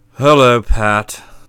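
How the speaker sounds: very low, dull, lifeless, toneless monotone. Narrator reads a character's opening line in a stage act that flopped: dull, toneless voice. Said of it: "said Catsmeat in a dull, toneless voice".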